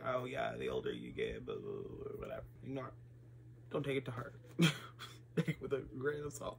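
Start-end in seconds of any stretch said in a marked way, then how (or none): 0.1-2.2 put-on acted older voice, low and whispered. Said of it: "act like I am literally fifty years old ... by saying".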